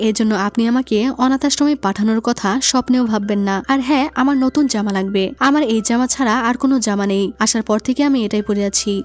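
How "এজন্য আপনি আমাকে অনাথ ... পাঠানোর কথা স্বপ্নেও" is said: usual speaking voice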